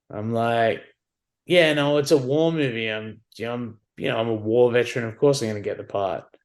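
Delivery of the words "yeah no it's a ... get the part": normal talking voice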